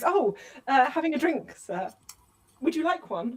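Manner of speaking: proper, genteel, high, slow ladylike voice. In character, suddenly remembering to act like a proper lady: acting as a proper lady. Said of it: "remembers she's just a lady and goes".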